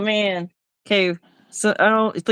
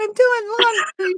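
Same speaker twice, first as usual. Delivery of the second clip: tiny, very high, faraway little voice; 12 semitones higher than usual. Retelling what someone called from the back porch: imitating a little voice. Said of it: "I hear a little voice from the back porch".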